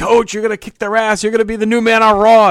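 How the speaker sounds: high, loud cheering yell.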